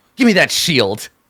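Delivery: angry, high-pitched snarling voice. Running a game, voicing her as she grabs for his shield, snarling. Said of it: "she snarls and looks at the shield".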